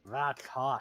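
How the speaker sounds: whispered mutter kept under the breath. Voicing a character muttering a remark: muttering under his breath. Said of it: "say under his breath in, uh, in deep speech".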